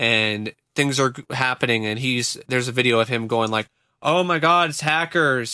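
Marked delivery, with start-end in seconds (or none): 4.0-5.5 hammy, unconvincing, faked alarm. Retelling a video of him reacting to a crash, imitating badly faked alarm. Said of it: "his acting is so bad".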